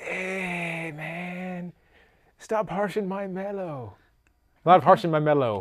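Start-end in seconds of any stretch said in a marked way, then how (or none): 0.0-3.9 very quiet lazy stoner drawl, stretched "hey". Joking with another speaker about today's generation, the speaker does a stoner impression. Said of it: "This is my impression right".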